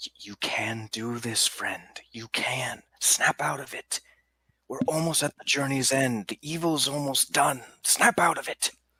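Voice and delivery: whispering. Voicing Relin whispering encouragement to a shocked companion: whisper. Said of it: "Relin is going to whisper to Shepard".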